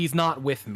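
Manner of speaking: emphatic, pointed delivery. She leans down to the watching people and announces: very loud voice. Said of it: "she like speaks with a very loud voice and says like".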